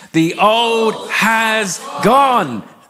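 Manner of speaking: very slow, high, convinced, declaring tone. Speaker leads listeners in repeating a declaration, saying it with more conviction. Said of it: "with a bit more conviction".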